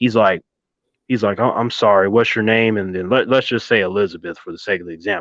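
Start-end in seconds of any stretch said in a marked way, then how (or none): 1.4-2.8 put-on fake friendly tone, lower pitch. Retelling how a drill sergeant suddenly spoke to a crying girl: imitating a fake nice tone. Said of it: "His whole demeanor changes".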